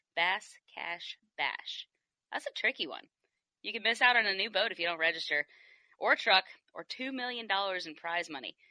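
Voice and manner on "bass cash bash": whispered slowly, each word deliberate. Speaker promoting a fishing tournament retries a tricky name, saying it slowly. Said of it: "I still can't even say it slow".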